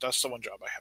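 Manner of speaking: soft, hushed, almost under-the-breath delivery.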